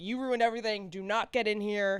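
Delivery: put-on angry tone. Retelling a TV scene where characters block someone: imitating someone angry. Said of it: "They're so mad at him".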